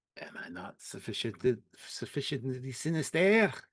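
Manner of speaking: exaggerated put-on French accent. Quoting a Picard line being rated: over-the-top French accent as Picard. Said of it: "In the over-the-top French accent".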